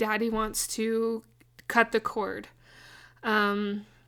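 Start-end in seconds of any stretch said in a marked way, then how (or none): none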